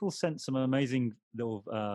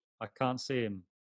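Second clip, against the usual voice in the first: normal talking voice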